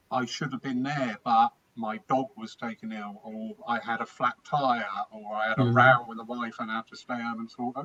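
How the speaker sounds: ordinary delivery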